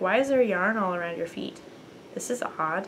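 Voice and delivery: plain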